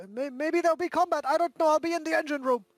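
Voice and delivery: shouting. A player speaks as his character, calling out to everyone around, yelling. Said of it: "yells around and says like".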